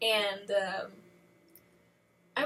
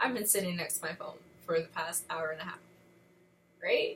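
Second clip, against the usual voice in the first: ordinary talk, nothing marked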